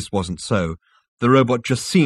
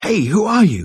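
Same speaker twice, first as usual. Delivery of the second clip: panting, out of breath, very high pitch; 10 semitones higher, 4 dB louder than usual. A man hanging from a ledge answers a disembodied voice, panted. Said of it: "panted Zaphod".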